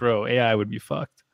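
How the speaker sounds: normal talking voice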